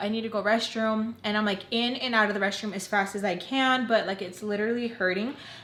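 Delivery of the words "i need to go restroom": ordinary delivery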